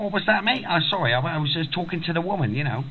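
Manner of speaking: Australian accent, high-pitched.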